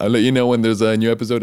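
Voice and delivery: rushed, rattled off way too fast. Signing off the episode to listeners, said way too fast. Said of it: "I say that way too fast".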